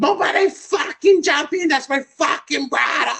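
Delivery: shrill, very high, top-of-the-lungs shriek. Retelling a sister yelling at a high school fight: imitating a girl screaming at top of lungs. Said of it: "screaming at the top of her lungs".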